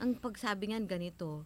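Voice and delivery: ordinary talk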